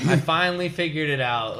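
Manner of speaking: normal talking voice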